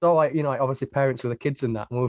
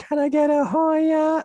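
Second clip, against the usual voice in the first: play-acted very high, drawn-out drunken scream, stretched long. Retelling a festival neighbour screaming all night: imitating a drunk scream. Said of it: "really drunk, just screaming".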